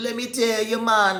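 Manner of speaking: botched put-on Jamaican accent, very high pitch. Retelling what two men said about Crown's debts; bad Jamaican accent. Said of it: "my accent is terrible with that".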